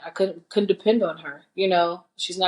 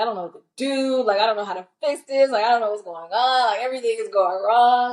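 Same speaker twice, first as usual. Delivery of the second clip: weepy, tearful voice, speaking through tears; 4 semitones higher than usual. Retelling calling a friend in senior year: imitating own past crying. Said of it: "I was calling her, crying".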